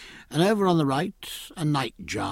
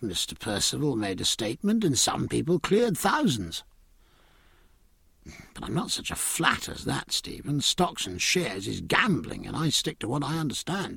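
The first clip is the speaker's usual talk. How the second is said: ordinary delivery, nothing marked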